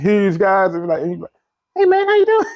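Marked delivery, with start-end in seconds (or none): 1.8-2.5 tiny, very high, squeaky mouse voice. Picturing a huge guy with a mouse voice greeting someone: mouse voice. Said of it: "real big guy with a mouse voice".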